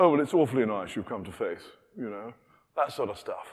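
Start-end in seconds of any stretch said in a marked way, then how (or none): 0.0-1.6 buttoned-up, restrained, reserved British polite manner. Mocking how reserved Brits greet a new believer: imitating a reserved Brit. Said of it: "we Brits are slightly too reserved".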